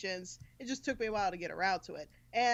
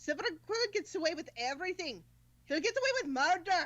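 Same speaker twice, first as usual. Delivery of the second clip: best-effort film-style Scottish accent, pitched up; 6 semitones higher than usual. Trying to imitate the voice actor from a film, Scottish accent like Brave. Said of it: "Scottish accent that I can actually recreate".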